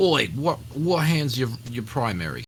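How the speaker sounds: Australian accent throughout. In a group conversation about left-handedness, speak in an Australian accent. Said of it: "Is that an Australian accent?".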